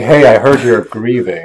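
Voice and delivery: very loud, drawn-out, smarmy sleazy salesman voice. Acting out an evangelist at a grieving person: imitating a sleazy salesman. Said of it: "you seem like this, like, sleazy salesman".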